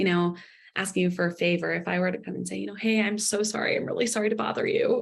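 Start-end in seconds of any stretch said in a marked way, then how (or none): 2.7-5.0 excessively sorry, over-apologetic, hedging tone. Role-playing asking someone for a favor: over-apologetic. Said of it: "illustrate with, like, a role play".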